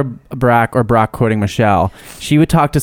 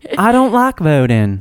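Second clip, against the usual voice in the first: put-on Southern accent, higher pitch; 5 semitones higher than usual. Retelling what a waitress said at a restaurant: imitating a waitress in Southern accent. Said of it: "Was that better?".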